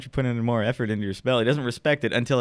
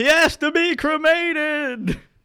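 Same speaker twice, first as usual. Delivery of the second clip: yell pitched way up, very high; 4 dB louder than usual. Voicing a fleeing widower in a game scene: yelling widower.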